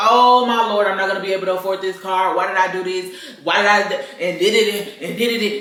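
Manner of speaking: play-acted loud, frantic, panicking voice. Retelling own thoughts after buying a brand new car: imitating own past panic. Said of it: "and I was panicking".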